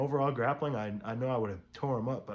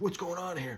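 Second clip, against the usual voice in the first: aggressive, hostile, confrontational, pitched-up tone; 7 semitones higher than usual. Retelling a hostile man interrupting a presentation: imitating hostile aggression. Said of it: "Just comes in with hard dog energy".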